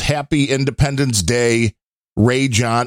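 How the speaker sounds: usual speaking voice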